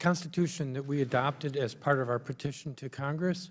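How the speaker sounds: soft, barely audible, too quiet to hear.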